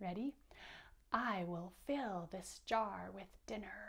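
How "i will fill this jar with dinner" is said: put-on hissing snake voice. Reading a story aloud and showing a listener how to say the line, snake voice. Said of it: "Can you use a snake voice to say".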